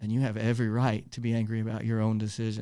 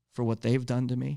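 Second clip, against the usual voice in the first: ordinary talk, nothing marked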